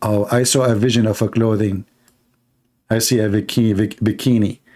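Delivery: ordinary delivery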